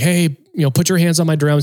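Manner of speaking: put-on scream. Retelling screaming as the drum riser was pushed too fast: imitating a scream. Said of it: "I just kept screaming".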